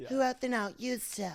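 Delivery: sweet voice with slight rasp. Imitating Sammy Sweetheart from a reality show: Sammy Sweetheart voice. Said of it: "Or she'd do that".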